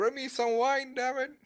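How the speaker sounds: shrill screaming, very high. Ron calls out from outside, screaming. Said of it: "you hear Ron screaming".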